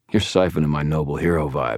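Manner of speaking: ordinary delivery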